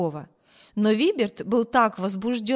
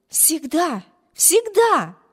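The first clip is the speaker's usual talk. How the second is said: ardent, heartfelt, fervent, raised voice; 7 semitones higher, 5 dB louder than usual. A narrator reads the sister answering Wibert's words: fervent exclamation. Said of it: "горячо воскликнула сестра".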